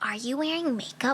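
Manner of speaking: put-on outrageous tone. Retelling what a man in the back seat asked, imitating an egregious tone. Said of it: "Like in the most like egregious tone ever".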